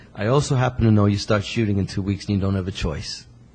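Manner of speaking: normal talking voice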